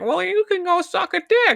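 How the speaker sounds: very high, slow, squeaky voice. Quoting George Lucas's reply to people who disliked his vision, in a Mickey Mouse voice. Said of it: "why were you doing a Mickey Mouse voice".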